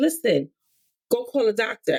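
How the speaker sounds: normal talking voice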